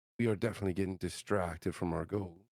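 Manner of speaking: hushed whisper, very quiet. Voicing a character who leans in to a companion: whispering very quietly. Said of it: "whispering to Kozik very, very quietly".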